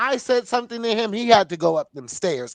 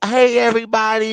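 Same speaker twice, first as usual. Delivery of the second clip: put-on coy, cute, nervous voice, louder; 2 semitones higher, 5 dB louder than usual. Retelling arriving on the show at first: imitating own coy cute greeting. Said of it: "very coy, very cute, like, nervous even".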